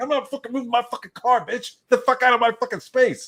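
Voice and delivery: put-on very high, fast, rattled-off New York accent. Retelling what the speaker said to a woman over a parking space, in a fast new york accent. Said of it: "I totally went into like New York mode. I started talking real fast".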